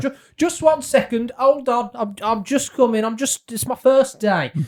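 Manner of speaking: high-pitched, called-out voice. Playing a gatekeeper answering arrivals at the gate: calling out. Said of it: "I'm just gonna call out".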